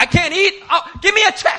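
very shrill, very high, loud, furious angry outburst. Retelling how a diner got up at the table: imitating an angry woman. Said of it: "she gets so angry".

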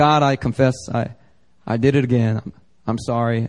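breezy, careless, low, offhand and cavalier, acted out. Speaker acts out a believer casually confessing sins to God, mock-cavalier confession. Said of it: "you just are cavalier about it".

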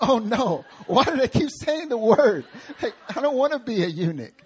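high, loud, mock horrified tone.

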